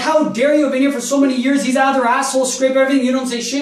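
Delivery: mock outraged, furious, indignant ranting. Retelling an argument with a maintenance worker: imitating own angry outburst. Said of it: "Now I'm losing it".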